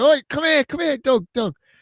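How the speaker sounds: very high-pitched, loud shout. Retelling calling someone over at a statue reveal: retelling a shout. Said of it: "I was shouting him and going".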